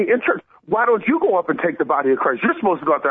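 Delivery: mock heated, arguing, yelling delivery. Retelling an argument during communion in church: imitating someone yelling. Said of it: "she starts yelling at me".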